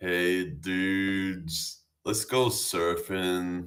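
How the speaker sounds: Californian surfer dude accent, drawn-out "dudes". Demonstrating california accents on stream; california surfer dude accent. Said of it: "the Californian surfer dudes".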